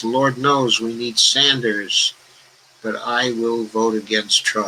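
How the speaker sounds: plain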